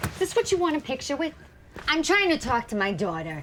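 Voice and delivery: irritated, curt, sharp snap, very loud. Someone talking to their daughter rebuffs a stranger's photo request, irritated and sharp. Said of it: "you don't have to use that tone with me".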